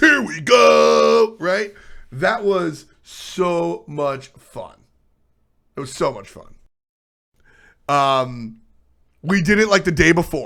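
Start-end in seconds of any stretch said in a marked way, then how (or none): 0.0-1.4 raspy, loud, gritty monster truck announcer voice. Recalling a first day, the speaker demonstrates the monster truck voice. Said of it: "monster truck voice".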